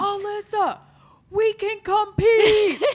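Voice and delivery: very loud, very high, long drawn-out scream. Retelling a partner screaming across a public gym: imitating him screaming. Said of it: "he's, like, screaming at me".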